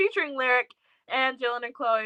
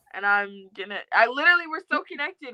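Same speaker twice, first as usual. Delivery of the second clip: normal talking voice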